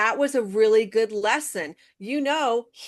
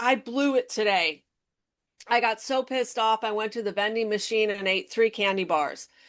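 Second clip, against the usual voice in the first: ordinary talk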